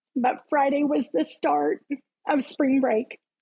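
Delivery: becoming emotional. Telling a personal story and apologizing mid-way, getting emotional. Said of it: "I'm going to get emotional".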